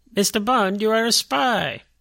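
high, loud, slow, drawn-out villain voice. Setting up an impression, quoting the villain Goldfinger: imitating Goldfinger. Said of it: "Goldfinger would say this, but he goes".

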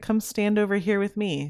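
smooth, coaxing, soothing, cool tempter voice. Acting out the tempter in the garden coaxing toward sin: imitating a soothing tempter voice. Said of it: "listen to my soothing words".

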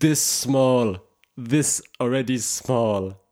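slow, imitated broken-English accent. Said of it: "the lady's like".

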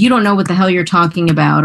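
ordinary talk, nothing marked

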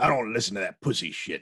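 put-on growling voice. Quoting Tony Todd's part in a movie to a fellow talker, in a Tony Todd growl. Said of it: "Tony Todd just kind of growls".

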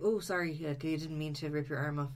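normal talking voice

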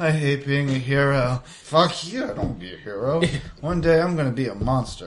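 put-on half-asleep, sleepy mumbling. Retelling being found asleep in the ambulance, the speaker acts out sleep-mumbling. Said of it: "just me mumbling".

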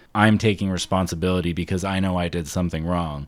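ordinary delivery

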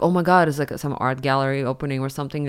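usual speaking voice

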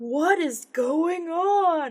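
exaggerated very high voice. Speaker recalls a favorite line from the first episode: exaggerated Ian line reading. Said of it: "it's just like really exaggerated".

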